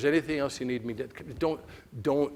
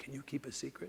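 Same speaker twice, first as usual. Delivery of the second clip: put-on hushed serious tone, much quieter; 12 dB quieter than usual. Retelling how a man asked him whether he could keep a secret, hushed serious tones. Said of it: "hushed tones".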